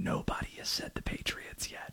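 very quiet, hushed whispered aside. Sports host updating on the calls taken so far, whispering. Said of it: "Don't know why I'm whispering".

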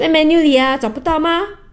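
high, impatient put-on waitress voice.

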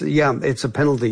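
ordinary delivery

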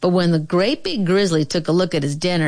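ordinary delivery

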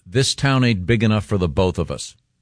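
normal talking voice

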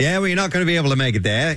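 put-on thick New England Yankee accent. Retelling a fireman's detour directions at a roadblock: full-on Yankee accent. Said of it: "he's had the full-on Yankee accent".

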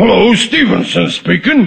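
disguised phone-style voice, sounding like a cold. Showing his wife how he'll fake a phone voice: imitating Stevenson's voice. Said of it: "I imitate his voice".

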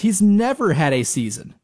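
normal talking voice

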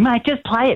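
mock impression, high-pitched and pushy.

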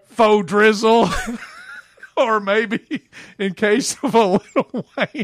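high voice, words broken up by laughter. Delivering a joke's punchline to Joe, laughing while talking. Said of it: "I was probably laughing too hard".

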